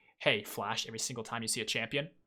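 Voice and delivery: ordinary talk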